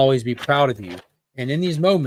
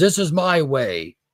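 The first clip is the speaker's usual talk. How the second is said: acted, furious, out-of-control outburst, drawn out; 2 semitones higher than usual. Retelling a comic scene where Batman screams at a priest: enraged scream. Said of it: "just enraged, kind of out of control, screams".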